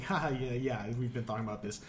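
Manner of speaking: normal talking voice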